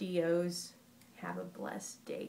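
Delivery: ordinary delivery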